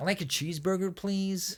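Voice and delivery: high, nasal put-on voice. Put on the spot, speaker delivers the line in a nasal voice. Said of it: "You gotta go nasally".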